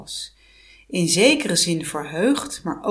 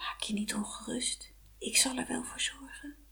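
very quiet, soft, hushed, barely audible whisper; 4 semitones higher, 16 dB quieter than usual. The doll in Vasilisa's pocket answers her as she nearly faints, whispered. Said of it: "het popje fluisterde".

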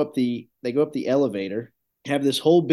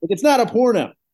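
put-on, very high, loud, furious angry shouting; 9 semitones higher, 5 dB louder than usual. Retelling how a woman got mad and started yelling; retelling an angry yell. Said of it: "She starts yelling about it".

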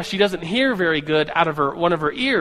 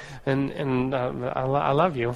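put-on mumble, quieter; 4 semitones lower, 6 dB quieter than usual. Recounting a TV scene where a man speaks to his date, retelling a mumble. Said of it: "he just kind of mumbles like".

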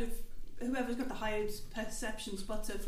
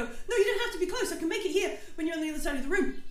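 meek, shrinking, timid, quick, higher small voice; 6 semitones higher, 5 dB quieter than usual. Narrating to a player who leans in, voicing a timid voice inside his head. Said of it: "a sort of timid voice inside your head go".

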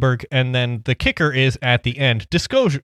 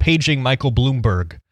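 ordinary talk

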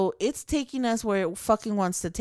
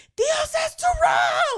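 mock yelling, much higher and louder; 5 dB louder than usual. Retelling a family boat trip, the speaker imitates his cousin yelling back orders. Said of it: "he was like yelling back".

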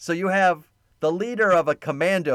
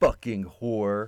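acted venomous spite, much lower pitch; 6 semitones lower than usual. Retelling a 1985 movie scene where a man insults a woman, mock-venomous insult. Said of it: "With as much venom as he can muster".

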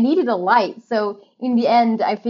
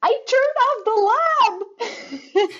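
very high, very slow, drawn-out shriek; 13 semitones higher than usual. Retelling running to the only other person in the warehouse: imitating her own screaming. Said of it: "I just run to them screaming".

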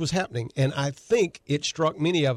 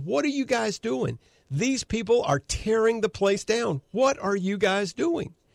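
mock high-pitched screaming outburst; 7 semitones higher than usual. Retelling a video of a supporter confronting an officer: imitating someone screaming. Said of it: "He is screaming at the officer".

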